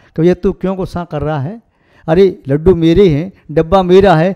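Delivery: ordinary delivery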